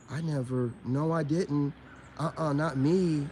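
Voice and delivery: soft, flat monotone with no fluctuation. Describing a woman who denies everything, the speaker mimics her, mocking a monotone denial. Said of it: "sit there monotone-like and not never fluctuate your tone".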